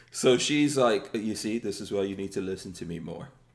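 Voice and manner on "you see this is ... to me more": dropped, deep, soft voice. Speaker retelling what his wife told him, in a deep voice. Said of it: "not in a deep voice like that".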